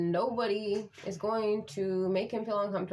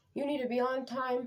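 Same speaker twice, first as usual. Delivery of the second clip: put-on yelling with voice pitched up; 5 semitones higher than usual. Retelling how the bus driver scolded the kids: imitating someone yelling.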